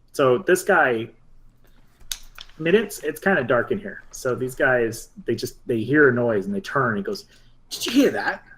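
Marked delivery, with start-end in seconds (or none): 7.7-8.4 high, hissing snake-man character voice. Voicing a snake man who hears a noise: snake voice. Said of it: "in a snake voice".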